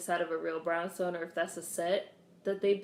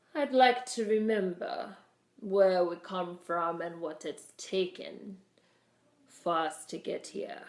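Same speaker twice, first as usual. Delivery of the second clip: put-on upper-crust Boston accent. Mimicking a man who seems to fake sounding upper crust, put-on upper-crust Boston accent. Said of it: "trying to put on a Boston accent to sound upper crust".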